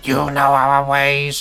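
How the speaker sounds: acted robot-like creature voice. Answering a fan asking about the Cybermen from The Wheel in Space, Cyberman voice. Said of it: "I always have to nod when I do that voice".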